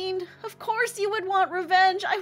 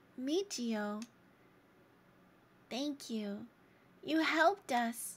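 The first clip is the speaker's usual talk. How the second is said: close to tears, choking up; 8 semitones lower, 10 dB quieter than usual. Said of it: "I'm gonna cry".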